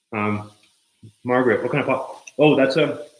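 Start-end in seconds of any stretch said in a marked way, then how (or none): 2.4-2.9 loud talking through a mouthful of food. Answering a viewer's question about the pot: talking with mouth full. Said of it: "my mouth is full of carrot".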